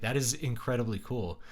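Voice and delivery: ordinary talk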